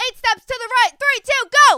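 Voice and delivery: shrill, very loud, high shouting. Recounting a gym warm-up, imitating the instructor: retelling the instructor's shouting. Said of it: "Sorry that we're screaming into the mics".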